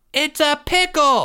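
very high-pitched, ringing group shout. A class yells during a baseball game as a runner is chased: yelling. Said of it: "yelled Mr. M's class".

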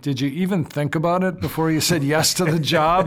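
snide, pointed, sarcastic tone. Speaker recalls a parent stopping in the hallway to speak to them, retelling a sarcastic remark. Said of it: "in a sarcastic voice".

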